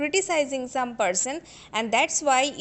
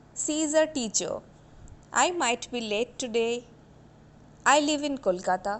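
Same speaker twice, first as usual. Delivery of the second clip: falling intonation at sentence end. A speaker demonstrates intonation on example sentences, with a falling tone at sentence end. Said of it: "you can see that my tone is falling".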